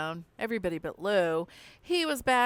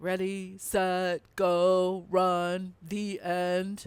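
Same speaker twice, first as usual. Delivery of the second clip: very slow, flat, mechanical, drawn-out robot monotone. Narrating a story, answering the coach's question like a robot. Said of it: "I said like a robot".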